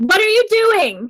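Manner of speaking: very high-pitched, loud shout. Yelling a question at another player's character in the game: yelling loudly. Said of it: "She says that loudly, like she yells at you".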